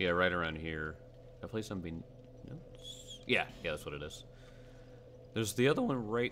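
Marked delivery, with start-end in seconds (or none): 5.3-6.3 voice cracking and breaking partway through. Speaker looks for the other one on the way, voice cracking. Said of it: "my voice cracked".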